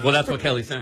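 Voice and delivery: normal talking voice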